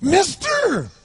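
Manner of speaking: very high, strange-sounding, shrill, loud, bizarre voice. Retelling a man who approached him begging, imitating the man's bizarre voice. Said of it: "He had this really bizarre-looking sounding voice".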